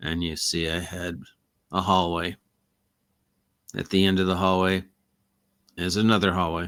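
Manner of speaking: very low, dead-level, flat monotone narration. Narrating an endless place of hallways in a flat monotone voice. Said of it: "very, very monotone ... So you'd have to talk like this".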